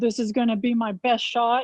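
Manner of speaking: mock sarcastic tone. Retelling how a man walked up to the ball, retelling a sarcastic remark. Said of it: "in a very sarcastic tone".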